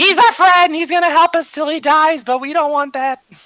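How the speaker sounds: loud, high-pitched yell. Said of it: "I'll just yell to the rest of the group".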